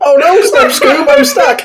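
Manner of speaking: very high-pitched cartoon voice. Speaker in a group bit does a Shaggy impression. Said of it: "my shaggy impression".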